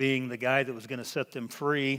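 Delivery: ordinary delivery, nothing marked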